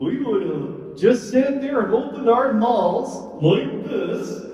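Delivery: kindly, friendly lion puppet voice. Telling the story through the puppet Mister Lion: Mister Lion puppet voice. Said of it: "the story through Mister Lion".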